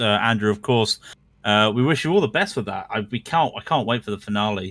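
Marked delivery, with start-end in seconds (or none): none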